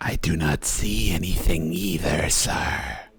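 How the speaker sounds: low, creepy voice. Voicing the snake Sniffle after a player asks: creepy voice. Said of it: "Only if you do the creepy voice".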